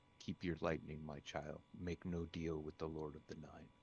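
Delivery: very low, very quiet, deep hushed voice. Game master voices a voice speaking inside a player's mind: deep voice in your mind. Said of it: "you hear a a deep voice inside your mind that says".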